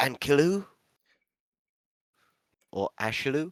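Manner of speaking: cautious, secretive, discreet tone. Asking a character about forges, glancing around: said quietly. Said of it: "and I'll stop and look back and forward and say it quietly".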